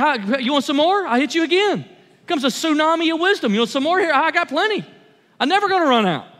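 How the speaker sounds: generous, open-handed tone, as if it never ends. Acting out God answering a prayer for wisdom: voicing God giving generously. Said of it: "God hits you with a wisdom cannon. He's like".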